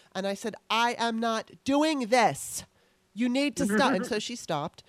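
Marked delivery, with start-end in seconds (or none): 0.7-4.0 loud, forceful screaming. Retelling a political argument with a woman, retelling own scream. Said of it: "I screamed my point so loud".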